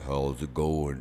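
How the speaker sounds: deliberately bad voice, dropped as deep as possible. Retelling walking out of the building and meeting Sam Elliott, bad Sam Elliott impression. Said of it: "I do his voice horrible".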